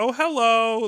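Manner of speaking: acted gentle, courteous voice. Retelling how an older gentleman at the door greeted him, imitating a very kind tone. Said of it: "very kind".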